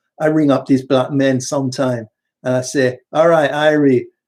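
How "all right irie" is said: put-on invented Jamaican accent. Speaker retells greeting men on the phone, put-on Jamaican accent. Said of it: "where you get the accent from?".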